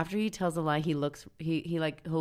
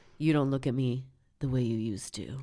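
put-on eerie, really creepy delivery; 2 semitones lower than usual. Retelling what a man says to the woman he is with: imitating a creepy tone. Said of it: "in a really creepy way".

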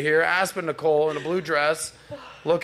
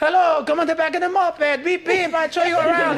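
put-on Italian man's accent; 12 semitones higher, 4 dB louder than usual. Telling a story about women on european vacations, mimicking an italian guy's accent. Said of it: "it's always sound like some Italian guy like".

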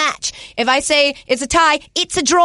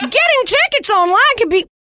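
put-on Southern accent with voice pitched up a bit; 7 semitones higher than usual. Asked to talk about SeatGeek as a movie star, try a Jimmy Stewart impression gone Southern. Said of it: "Why'd I go Southern?".

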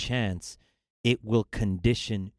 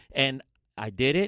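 ordinary talk, nothing marked

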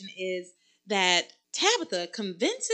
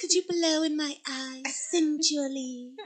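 put-on baby-girl voice, much higher; 6 semitones higher than usual. Imitating Charity asking for help, in her little baby-girl voice. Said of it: "this little baby girl voice".

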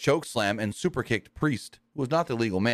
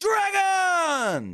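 mock very high yell, word stretched long. Retelling a wrestler grabbing the microphone to accept a match: imitating Okada yelling. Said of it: "he yells out".

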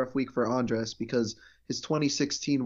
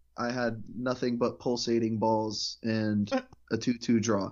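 usual speaking voice

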